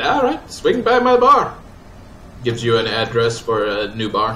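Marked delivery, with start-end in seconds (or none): 0.0-1.6 very high, bad put-on Scottish accent. Game master voicing a bar-owning character, in a bad put-on Scottish accent. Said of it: "(opening words) Or the one person that was not here. Sure. And now we have another person who's not here. It's just going to be like this. Did Suki finally grow tits? No. No, not yet. He's working on it, though. Suki! Wa ... Now this is the Scottish guy? Yes".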